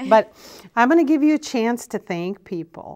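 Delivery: teary, on the verge of tears. Offering the other person a chance to thank people, teary. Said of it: "and I'm even getting teary".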